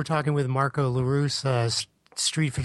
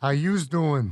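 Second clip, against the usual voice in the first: mocking Brooklyn accent, New York style. On the show, mocking each other's accents, imitating Tom's Brooklyn accent. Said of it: "Keeps trying that Brooklyn accent".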